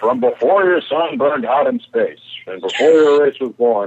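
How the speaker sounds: grand, declaiming, cosmic voice like an ancient oracle. Retelling an early cut of the episode: booming Guardian of Forever voice. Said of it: "some guy just doing a booming voice".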